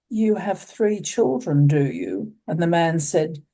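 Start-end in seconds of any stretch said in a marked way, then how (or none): 0.1-2.3 acted, menacing, sinister, veiled-threat voice. Quoting a cardinal speaking to one of George Pell's staff, retelling in a sinister voice. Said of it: "in a rather sinister voice".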